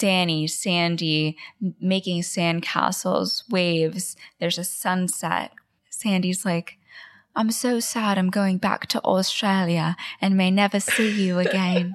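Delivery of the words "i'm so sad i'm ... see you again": put-on British accent. Retelling a beach scene between Danny and Sandy, doing Sandy in a British accent. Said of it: "sounds like beautiful British accent".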